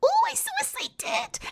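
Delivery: put-on very high, happy, drawn-out toddler squeal. Showing how a toddler sounds when really happy: imitating a toddler's high-pitched happy voice. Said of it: "his voice gets all high-pitched and he goes".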